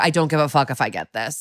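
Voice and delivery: mock careless, don't-care delivery. Retelling how a friend acts at commercial auditions: imitating an I-don't-care attitude. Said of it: "goes into the attitude".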